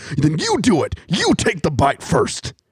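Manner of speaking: terrified, wild, panicky, high-pitched and swooping. Retelling a wrestler afraid of a snake: imitating terrified Macho Man. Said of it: "Macho's just, like, terrified of the snake".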